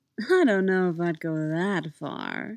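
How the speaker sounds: slow drawling speech. [name] replies to Jason after laughing, drawling. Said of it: "he drawled".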